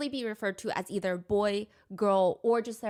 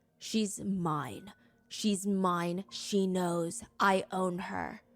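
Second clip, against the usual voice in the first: put-on deep, aggressive voice. Repeating what a new voice said in a recording: imitating a deep, aggressive voice. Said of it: "deep, aggressive voice".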